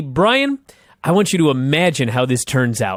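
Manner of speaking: ordinary delivery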